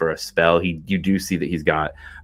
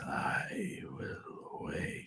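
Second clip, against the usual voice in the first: breathy, hushed whispered rumble, barely a voice. Storyteller voicing a voice heard in the dome, rumbling voice. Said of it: "a voice that isn't really a voice, more of a rumble".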